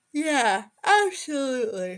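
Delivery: yawning while speaking. Agreeing with the other speaker about a Riverdale scene, mid-yawn. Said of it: "got me mid-yawn there".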